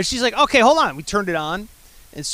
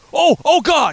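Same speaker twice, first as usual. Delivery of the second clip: acted-out yell, higher pitch; 9 semitones higher than usual. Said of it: "He's, like, yelling".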